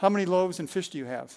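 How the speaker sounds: mock-serious, deadpan tone. Retelling how a friend turned and questioned the speaker: retelling a deadpan question. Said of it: "serious, you know, deadpan, he said".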